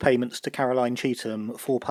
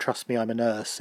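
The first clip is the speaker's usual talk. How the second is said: usual speaking voice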